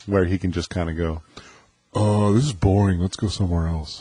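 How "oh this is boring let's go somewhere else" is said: put-on offhand, bored, couldn't-care-less teen voice. Describing a reckless younger person, the speaker is imitating Kyle. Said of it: "that was a good impersonation".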